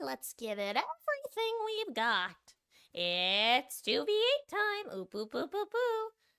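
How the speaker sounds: half-hearted, high, demented cartoon voice, drawn-out "it's". Playing the game and doing a half-assed Monokuma impression. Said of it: "my half-assed Monokuma impression".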